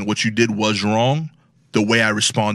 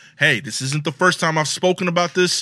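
mock serious, stern, with raised pitch; 7 semitones higher than usual. Retelling a second warning to the kids about misbehavior: imitating own stern warning. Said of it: "I say it sternly".

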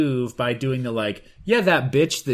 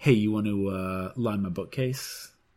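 sly, loaded, suggestive innuendo voice; 6 semitones lower, 6 dB quieter than usual. Joking that anything said in a sexual innuendo voice sounds like innuendo. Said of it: "you say it with a sexual innuendo voice".

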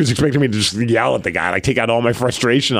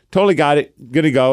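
ordinary talk

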